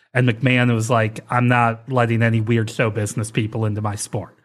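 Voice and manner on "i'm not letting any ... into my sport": ordinary talk, nothing marked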